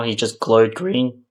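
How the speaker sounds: voice cracking, breaking mid-sentence. Reviewing a movie to viewers, with the voice cracking. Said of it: "Sorry, voice crack".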